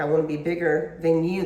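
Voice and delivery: ordinary talk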